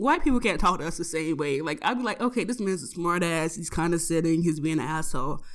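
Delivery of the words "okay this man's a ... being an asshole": plain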